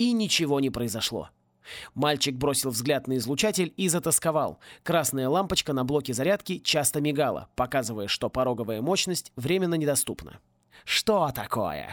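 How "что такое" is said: low, derisive, scoffing, mocking jeer. Reading a story, a character taunts a boy whose weapon won't fire: mocking. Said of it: "насмешливо произнес Мордевольт".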